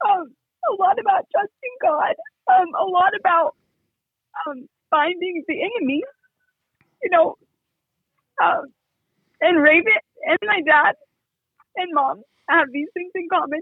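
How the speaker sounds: tearful, choked up. Describing lessons learned from a show, on the verge of crying. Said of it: "wow, I'm going to cry".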